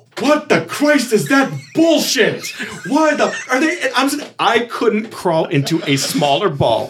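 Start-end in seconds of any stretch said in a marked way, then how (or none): 0.2-3.8 play-acted very high full-lung bellow. Retelling a backstage moment when someone shouts at a promo: imitating someone yelling at the top of his lungs. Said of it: "at the top of his lungs".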